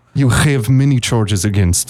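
put-on bad Russian accent. Podcast host does a mock arrest bit in a bad russian accent. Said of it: "These are the worst Russian accents".

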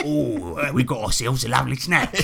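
faux Cockney accent, monster voice. Comparing a game's faux Cockney accents, doing a Lord of the Rings orc voice. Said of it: "It's like the orcs from Lord of the Rings".

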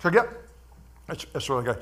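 talking with mouth full. Eating while talking and apologizing for it, talking with mouth full. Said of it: "I'm talking with my mouth full".

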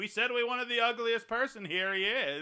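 high, loud, patronizing put-on showman voice.

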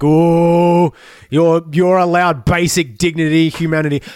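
mock grudging words through gritted teeth, drawn out. Mimicking what the cops say, through gritted teeth. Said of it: "through gritted teeth".

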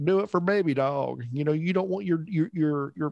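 put-on West Virginia accent, pitched high. Imitating the governor pushing vaccines with a dog: imitating governor's West Virginia accent. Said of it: "this is just his accent".

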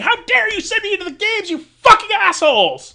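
very high, shrill, very loud, all-out screaming. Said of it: "she's screaming".

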